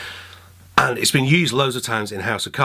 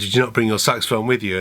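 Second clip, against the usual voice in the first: ordinary talk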